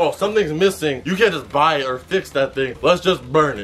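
usual speaking voice

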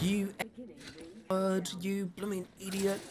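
put-on furious scream. Retelling a fan at the finals screaming at the players: imitating a fan screaming. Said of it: "And he was screaming like".

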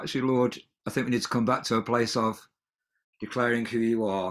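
plain

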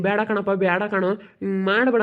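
plain reading voice

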